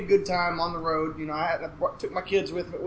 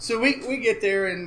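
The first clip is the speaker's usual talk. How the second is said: plain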